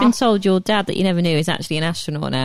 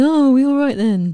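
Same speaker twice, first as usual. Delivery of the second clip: mock hungover speech, higher and louder; 7 semitones higher, 4 dB louder than usual. Joking about waking up after the crisis: imitating a hungover voice. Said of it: "I'd be very hungover going".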